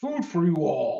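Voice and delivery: big, rowdy, boisterous, hearty call. A player's character calls out in Sylvan to the little red caps, very loud and boisterous. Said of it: "in a very loud, boisterous voice".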